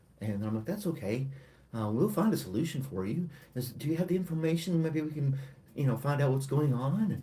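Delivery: very hushed, soft, overly kind calm voice. Showing how she talks to mad customers at the post office, acting out a brought-down voice. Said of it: "I bring my voice down".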